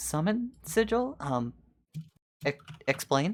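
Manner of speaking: slow, very confused, puzzled and bewildered tone. Voicing a princess who finds a stranger in her room: very confused. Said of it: "she looks at you very confused".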